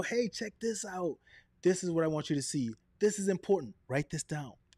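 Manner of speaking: lively, excited voice with swooping, varied intonation. Teaching speaking tips, the speaker demonstrates an excited, varied intonation. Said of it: "I'm talking about a subject and I go".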